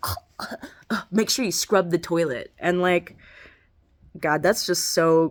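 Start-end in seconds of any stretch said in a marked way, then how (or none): 0.0-2.5 mocking, halting, taunting parody. Retelling how the mother mocked the speaker: imitating someone mocking. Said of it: "she started mocking me".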